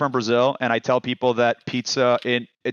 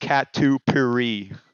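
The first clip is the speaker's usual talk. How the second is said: catupiry said in a put-on American accent. Explaining a word in conversation, catupiry said in an american accent. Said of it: "I'll do it with a more of an American American accent".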